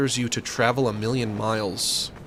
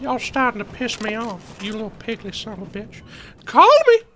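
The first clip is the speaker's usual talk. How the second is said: put-on very high, loud old man voice; 11 semitones higher, 7 dB louder than usual. Doing an impression of the old man from Family Guy: old man from Family Guy impression. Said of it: "my impression of the old man from Family Guy".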